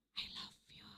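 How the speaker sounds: whispered, barely voiced, very soft. Describing lovers who need not shout to be heard, whispered. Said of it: "Berbisik aja udah kedengeran".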